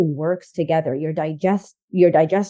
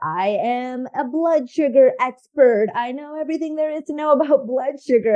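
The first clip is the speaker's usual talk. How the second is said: sarcastic, tongue-in-cheek, pitched-up tone; 6 semitones higher than usual. Describing your past self as a nutritionist, say it sarcastic. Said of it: "I'm being sarcastic here".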